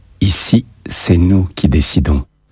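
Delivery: plain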